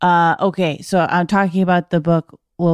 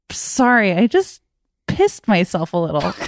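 mock giggling delivery. Retelling an own past aside on the show: imitating own giggling aside. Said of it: "and I giggle, and I go".

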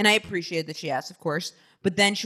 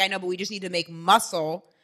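usual speaking voice

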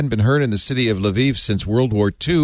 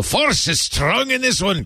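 Scottish accent, pitched very high; 11 semitones higher than usual. Hosts riffing on a Star Wars story, Scottish Darth Vader voice. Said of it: "the Scottish Darth Vader".

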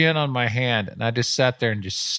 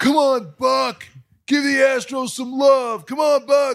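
very high, loud holler; 13 semitones higher, 4 dB louder than usual. Retelling how a fan in the stands kept calling out: imitating a fan yelling. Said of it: "yelling out, yelling the whole time".

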